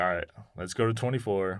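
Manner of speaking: plain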